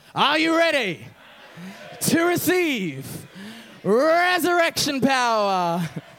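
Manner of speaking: slow, preaching, sermon-style preacher delivery. Showing the congregation how to say the line like a gospel preacher. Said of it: "You gotta say it like a gospel preacher".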